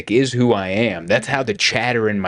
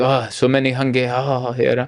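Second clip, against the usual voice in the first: put-on politely needling, lightly jabbing tone; 2 semitones higher than usual. Retelling the mom's first remarks on arriving, imitating a polite jab. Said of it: "Like politely, she just like jabs at it".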